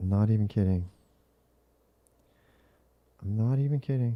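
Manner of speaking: talking softly and quietly. Reacting to new Reddit comments while a wife sleeps next door: talking softly. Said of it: "I have to talk softer 'cause my wife's asleep".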